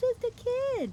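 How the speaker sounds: very high, taunting, mocking falsetto. Narrator reading a man mocking his friend's words back at him, in mocking falsetto mimicry. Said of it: "mimicked in a falsetto voice".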